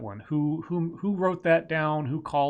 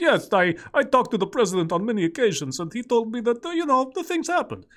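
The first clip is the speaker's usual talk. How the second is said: put-on Eastern European accent, pitched up; 8 semitones higher, 4 dB louder than usual. Guessing how a prank call went, doing Captain Janks's fake Eastern European accent. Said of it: "using his best like Eastern European accent".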